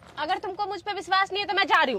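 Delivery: put-on high, fast, girlish sulky voice, pitched way up, pouting.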